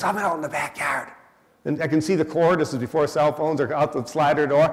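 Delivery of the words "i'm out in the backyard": put-on whisper, much quieter. Retelling his mother-in-law's phone call to him, retelling a whisper. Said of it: "why are you whispering to me?".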